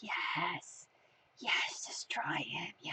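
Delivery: low, slow creepy whisper. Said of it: "You're just whispering in his, his ears like a, like a creepy little conscience".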